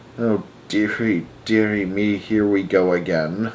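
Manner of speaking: low, slow, soft murmur under the breath. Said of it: "murmuring softly under his breath".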